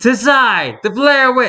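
ridiculous, very high, drawn-out voice. Retelling a prank on a roommate about a movie's ending: ridiculous Blair Witch voice. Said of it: "quoting that in a ridiculous his voice".

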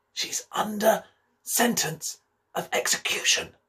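hushed whisper, close to the ear. On tiptoe with his mouth close to her ear, whispering. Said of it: "put his mouth close to her ear and whispered".

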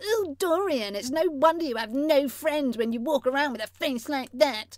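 taunting, sarcastic, mocking tone through tears. Sixteen-year-old mimicking their mum mid-argument: mocking tone. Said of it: "I assumed the best mocking tone I could".

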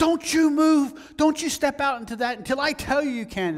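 very high, shrill, loud screaming. Speaker acting out a woman screaming at people passing by, retelling her screaming. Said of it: "she would be screaming at people".

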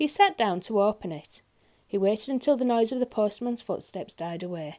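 plain reading voice

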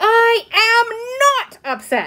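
shrill, very slow yell, stretching am. Narrator reads a girl answering her father's sympathy: yelling. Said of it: "yelled Ramona".

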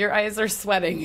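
usual speaking voice

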